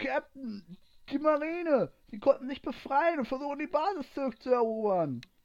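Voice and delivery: loud, breathless, high-pitched shout. A crew member bursts through the door to warn the captain, calling out loudly. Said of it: "Rief er laut".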